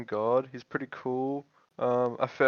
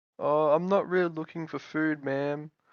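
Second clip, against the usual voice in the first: nervous, timid voice, higher pitch; 3 semitones higher than usual. Playing a timid guy answering a woman who points to the food: nervous little twerp. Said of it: "nervous little fucking little twerp".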